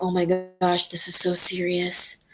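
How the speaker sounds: put-on anime girl character voice, dropped into dead serious tone. Showing how the character's voice sounds in serious mode: imitating Rika Furude's serious voice. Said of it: "it gets kind of like this".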